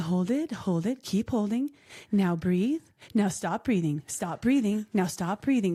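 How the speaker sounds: put-on Polish accent. Retelling what a technician kept saying during a scan: imitating a polish accent. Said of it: "But she was Polish".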